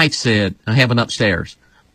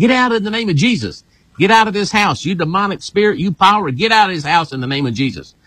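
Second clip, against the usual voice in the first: put-on fierce, full-throated, high scream at top of lungs; 8 semitones higher than usual. Retelling going down the stairs at night: retelling a scream. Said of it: "I am screaming to the top of my lungs".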